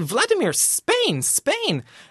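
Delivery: mock anxious, very high, swooping nervous voice. Retelling how they pointed south and spoke to him, acting out being anxious.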